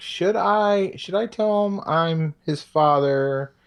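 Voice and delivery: high, musing character voice. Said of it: "and then he's like".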